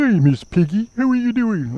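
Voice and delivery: very high, squeaky put-on cartoon voice. Trying a quick impression that does not work: failed Kermit impression. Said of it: "That was more like Barney".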